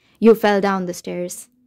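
ordinary delivery, nothing marked

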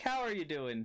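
bright, friendly, cheerful, high witch character voice. Storyteller voicing a needle that answers the group, in a happy witch voice. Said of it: "In the voice of the witch".

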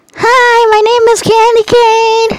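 put-on very high-pitched, loud, projected girl voice. The speaker shows off a character voice: Candy Cane voice. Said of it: "if you want my candy cane voice, this is what it is".

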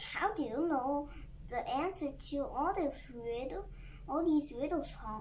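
ordinary delivery

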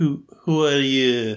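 terrible, bad French accent. Recapping the story, speaker quotes Pepper coming down: Pepper's terrible French accent. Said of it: "she says it in a terrible French accent".

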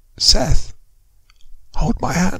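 quiet, hushed, almost inaudible voice. A mother in bed reaches out to her son, quiet, almost inaudible. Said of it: "her voice was quiet, almost inaudible".

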